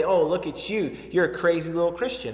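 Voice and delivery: plain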